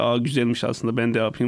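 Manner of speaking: ordinary talk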